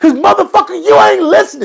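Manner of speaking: high, loud hollering outburst. Explaining to listeners why he keeps hollering: hollering. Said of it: ""Why are you hollering all the time?"".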